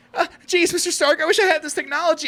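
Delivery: very high-pitched cartoon voice. Mocking how Spider-Man complains to Mister Stark: Morty voice. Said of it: "I just do the Morty voice for Tom Holland".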